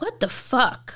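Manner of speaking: acted-out, fed-up, furious, disbelieving, exasperated outburst. Retelling the moment a shirt got stained and thrown away, acting out past anger. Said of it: "I was so angry".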